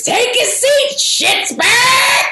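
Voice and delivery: high male scream. Retelling how a friend Bill stood up when the team scored, imitating Bill's full-throated scream. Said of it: "screams out in a full-throated man voice".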